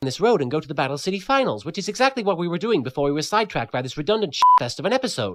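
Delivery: put-on cartoon hero voice, rushed. Voicing Yugi in a short shot, talking really quickly. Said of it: "I'm talking really quickly".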